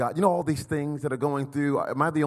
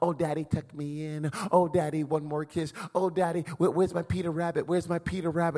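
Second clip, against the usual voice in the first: put-on small, three-year-old child's voice; 3 semitones higher, 3 dB quieter than usual. Retelling bedtime requests of a three-year-old: imitating a three-year-old child. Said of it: "when we put our three-year-old to bed".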